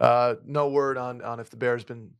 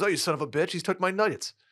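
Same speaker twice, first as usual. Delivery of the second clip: put-on Australian accent; 6 semitones higher than usual. Retelling what an owner shouted in a video: Australian-sounding accent. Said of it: "What accent was that?".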